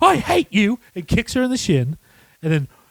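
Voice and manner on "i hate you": put-on furious, angry voice, higher. Retelling a movie scene where the character storms off: imitating a furious character. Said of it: "he is so fucking pissed".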